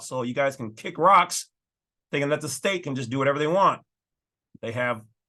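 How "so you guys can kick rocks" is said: plain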